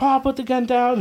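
very high, screamed, pleading yell. Retelling mom telling Pa to put the gun down: imitating someone yelling. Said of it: "yelling at him and shit like that".

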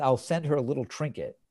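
ordinary delivery

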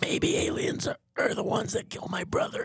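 put-on strained raspy voice. Joking about aliens, doing an RFK Jr. impression. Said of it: "You gotta do that voice on stage".

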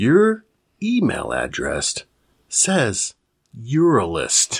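very slow, deliberate, every word drawn out. Speaker tells Dave to listen very carefully, then says this really slowly. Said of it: "I'm going to say this really slow".

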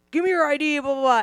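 put-on yelling. Retelling how a cop demanded an id: imitating a cop yelling. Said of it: "he's all yelling at me".

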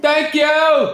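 loud, piercing, shrill yell, very high pitched. Telling a story about a woman who always thanked people this way: retelling a yelled thank-you. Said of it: "what are you fucking yelling for?".

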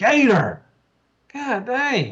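mock, very high, swooping, scolding yell. Retelling yelling at the snoring dog gator: imitating own yelling. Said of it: "I have to yell at him sometimes".

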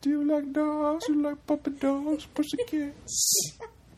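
creepy, very high voice. Mimicking the voice another speaker just used: imitating a pedophile voice. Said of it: "Was that your pedophile voice?".

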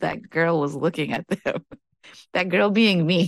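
talking through laughter. Retelling overhearing two women talk about the speaker, laughing while talking. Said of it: "I'm laughing".

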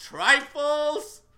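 very high-pitched, very loud, shrill yell. Retelling a homily heard at the seminary: imitating a priest yelling. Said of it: "and he yelled".

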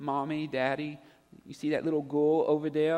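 put-on sweet, innocent little-girl princess voice. Parent quotes their daughter trying to get their attention, in a sweet innocent princess voice. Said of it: "in her sweet, just innocent princess voice".

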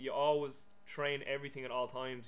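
normal talking voice

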